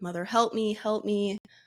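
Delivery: plain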